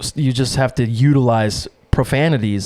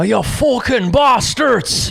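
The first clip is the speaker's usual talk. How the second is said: put-on Scottish or Irish accent; 11 semitones higher than usual. Doing an impression while joking about needing a cigar: Scottish or Irish accent. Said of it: "Scottish or Irish".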